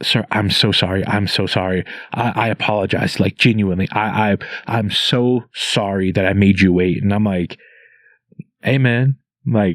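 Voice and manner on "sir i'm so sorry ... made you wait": mock heartfelt, acted sincere-sounding delivery. Recounting a man who called him over and apologized, imitating a heartfelt apology. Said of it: "he's so heartfelt with this".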